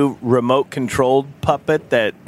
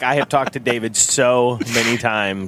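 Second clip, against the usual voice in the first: plain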